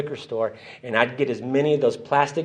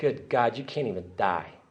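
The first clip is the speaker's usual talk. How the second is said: tearful words sobbed out while crying; 2 semitones lower, 8 dB quieter than usual. Retelling coming to after drinking: imitating own past crying.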